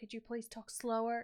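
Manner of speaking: cringe, bad put-on American accent. Retelling what staff kept saying to a friend: cringe put-on american accent.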